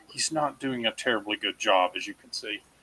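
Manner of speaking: confidential aside, shared like a secret. In character, explaining a companion to some gentlemen: confiding aside. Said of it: "I'll lean in like I'm confiding".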